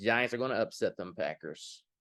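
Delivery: ordinary delivery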